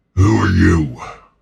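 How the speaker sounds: put-on orc creature voice. In a role-playing game, a character questions the newcomers, in an orc voice. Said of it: "It's supposed to sound like an orc".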